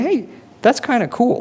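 pitched way up, impressed-sounding voice.

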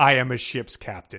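said with put-on pride. Recounting a book scene where a ship's captain is asked why he's there, retelling proudly. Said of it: "he says proudly".

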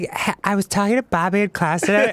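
put-on chatty teenage girl voice, phone-chatter style. Voicing a game character as a teenage girl on the phone: imitating a teenage girl on the phone. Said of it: "he's like a teenage girl talking on the phone".

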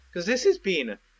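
voice cracking and breaking. Talking to viewers while playing, voice cracking. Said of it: "voice break".

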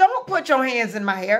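ordinary talk

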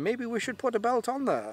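fake German accent, very high and sing-song. Acting out what somebody might say, in a put-on german accent. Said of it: "that was my German accent for the day".

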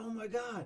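mock thrilled, very high, hyped squeal. Retelling seeing a dancer up close: retelling own hyped reaction. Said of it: "And I was so hyped".

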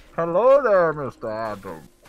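loud, booming put-on character voice. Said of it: "Yo, do the Bane voice".

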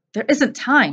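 curt, sharp, snapped tone. Trapped in a closet, one companion rejects another's plan to go back, snapping. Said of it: "snapped Lore".

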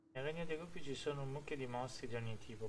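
ordinary talk

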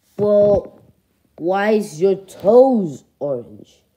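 strange, odd adult duck voice. Grown duck talking back to another character, grown-up duck voice. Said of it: "Why do you talk like that?".

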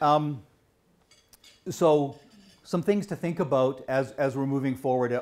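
loud, projected gym teacher voice.

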